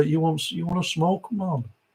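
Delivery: soft, not-great put-on Jamaican accent. Retelling a hotel security guard offering weed at the wedding: not-great jamaican accent. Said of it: "which is not my very best Jamaican accent".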